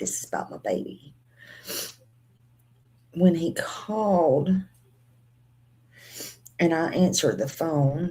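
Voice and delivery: speaking while crying, words through tears. Telling the viewers about a FaceTime call, crying while talking. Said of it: "I can't get on here without crying".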